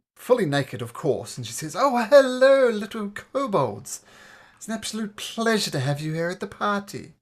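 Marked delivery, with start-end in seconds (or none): 1.8-7.0 put-on middle-aged woman voice, raised and pitched up. Narrator tells of a woman greeting two kobolds at a party, voicing a middle-aged woman. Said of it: "there's a middle-aged woman".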